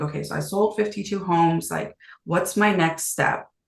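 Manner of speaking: plain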